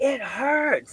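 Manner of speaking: shrill, very high yelling. Retelling how a woman climbing a rope yelled, imitating her yelling. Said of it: "she just like yells".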